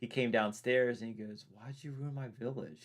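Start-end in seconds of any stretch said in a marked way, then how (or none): 1.5-2.8 put-on grave, sorrowful tone, quiet and serious. Retelling what someone said after coming downstairs, imitating a serious, sad tone. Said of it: "such a serious, sad tone".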